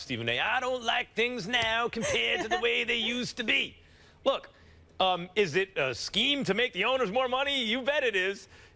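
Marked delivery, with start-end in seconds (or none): 0.4-3.8 raised, mock grumpy old man voice. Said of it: "You sound like Dana Carvey's grumpy old man".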